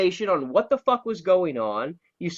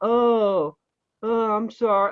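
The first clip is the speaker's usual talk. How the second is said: sad, mopey, hangdog, puppy-dog sorry tone; 4 semitones higher than usual. Critiquing another speaker's line reading, imitating a moping apology. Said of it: "Like you're moping".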